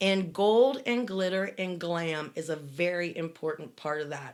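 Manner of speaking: ordinary delivery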